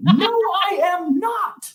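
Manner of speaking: put-on very high, very slow, drawn-out child's howling scream. Retelling a little kid's reaction to a museum mirror: imitating a child screaming. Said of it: "this little kid was screaming".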